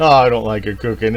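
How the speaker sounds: ordinary delivery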